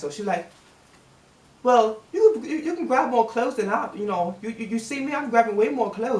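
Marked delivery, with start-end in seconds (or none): 1.6-6.2 put-on British accent. Retelling what his manager said while grabbing clothes: imitating manager's british accent. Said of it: "she got a British accent".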